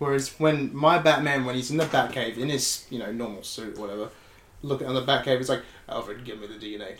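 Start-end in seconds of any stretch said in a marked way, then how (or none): 5.9-7.0 flat, emotionless, low, very quiet, barely audible deadpan. Describing how Batman talks to Alfred in the Batcave, deadpan Batman voice. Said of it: "he's just deadpan".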